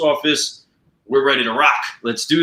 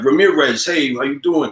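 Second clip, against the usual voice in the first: put-on thick, laid-on Brooklyn accent; 2 semitones higher than usual. Retelling the post's sergeant major greeting him, thick Brooklyn accent. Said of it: "he's got that deep accent".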